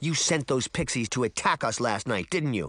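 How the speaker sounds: ordinary delivery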